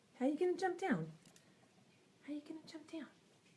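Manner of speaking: very high, soft, cutesy cat voice. Talking to her cat about jumping down, in her cat voice. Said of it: "I don't even realize I do my cat voice".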